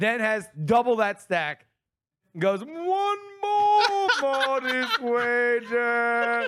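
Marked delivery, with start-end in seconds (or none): 2.7-6.5 grand, theatrical, very slow delivery, pitched up. Telling how a man kept betting everything, the speaker quotes him in a theatrical voice. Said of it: "in his theatrical voice".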